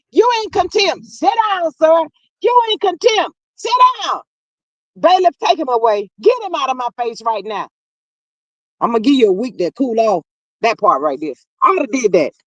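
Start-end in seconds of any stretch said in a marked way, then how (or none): 0.2-10.3 put-on stern judge voice, higher. Acting out holding a courtroom bully in contempt, playing a stern judge. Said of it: "Give me that Geiger and the gavel".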